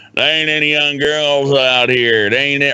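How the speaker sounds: bitter grumbling. Acting out a guy at a bar complaining there are no young girls: imitating a complaining bar patron. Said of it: "the fat, stubby motherfucker sitting out there going".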